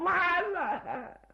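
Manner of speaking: wailing in despair.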